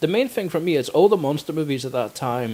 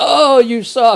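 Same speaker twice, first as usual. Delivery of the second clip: shrill, high, loud, taunting cartoon-style jeer; 11 semitones higher, 11 dB louder than usual. Retelling how a man at the airport taunted a stranger, mock-taunting in Lenny's voice. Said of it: "starts taunting the guy in the voice of".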